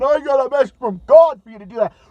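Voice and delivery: loud, prayer-like delivery. Mocking a televangelist's prayer about a bombing: imitating Pat Robertson praying. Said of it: "He's praying".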